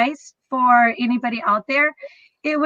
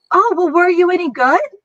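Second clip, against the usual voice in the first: chirpy, upbeat, peppy, cheery put-on girl's voice; 5 semitones higher, 4 dB louder than usual. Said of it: "so peppy, so cheery".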